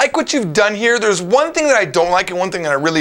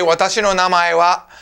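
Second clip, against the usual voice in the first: usual speaking voice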